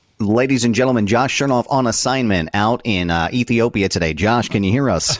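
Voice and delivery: silky, smooth, buttery news-anchor radio announcer voice. Introducing someone on assignment like the six o'clock news, buttery radio voice. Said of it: "I have to use that like buttery radio voice".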